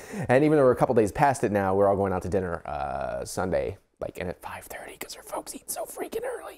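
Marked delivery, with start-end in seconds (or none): 4.0-6.6 soft, hushed, quiet whisper. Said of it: "I'm trying to be a little bit quiet".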